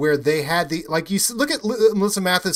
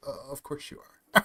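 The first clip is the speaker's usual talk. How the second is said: devilish, sly, hushed, breathy whisper; 3 semitones lower, 9 dB quieter than usual. Retelling a man's reply while he took out the trash: imitating a devilish, amused reply. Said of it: "a very funny, devilish smile".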